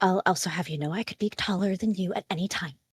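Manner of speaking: muttered under the breath, to herself. A character answers after talk of negotiations, muttered under breath. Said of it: "she kind of mutters under her breath".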